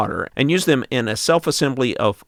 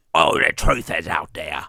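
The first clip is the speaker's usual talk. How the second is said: very low, deep, put-on old British sailor voice; 7 semitones lower than usual. Trying out how a british accent would sound, british accent. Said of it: "how would a British accent?".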